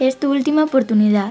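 sweetly spoken, sugary, honeyed tone. Taking a turn saying the line in a group: sweet. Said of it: "lo has dicho tan dulce".

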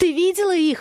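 squealing shriek, very high and shrill. Frightened Masha asks the narrator a question, shrieking. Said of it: "взвизгивает она".

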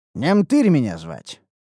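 ordinary delivery

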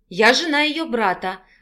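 ordinary delivery

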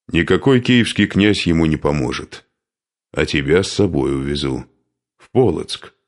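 ordinary delivery

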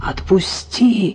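hoarse, rasping wheeze. A narrator reads a choked man's plea to his attacker, wheezing. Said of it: "прохрипел Сизов".

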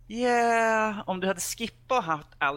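high, loud, exasperated, fed-up retort. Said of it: "Så sitter man så här".

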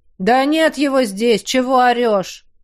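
spoken lazily. A guard answers someone calling out a name, in a lazy reply. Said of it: "лениво отозвался кто-то из стражников".

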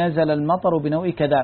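ordinary delivery

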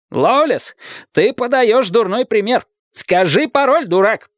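high-pitched, commanding shouting. A commander demands the password from a man who refuses it, shouting. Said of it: "крикнул командир".

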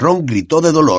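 plain reading voice

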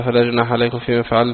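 usual speaking voice

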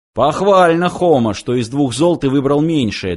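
plain

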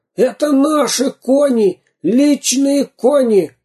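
shrill shout, very high and very slow. A pirate shouts as the robbers watch their horses being led to the zoo; shouting. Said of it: "закричал пират".

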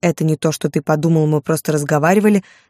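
ordinary delivery

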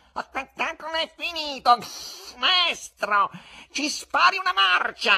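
very high, loud, theatre-filling growl. A narrator reads the cat leaping to the footlights, growling across the theatre. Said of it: "ringhiò per tutto il teatro".

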